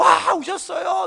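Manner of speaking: slow, stretched, tearful, overwhelmed shouting.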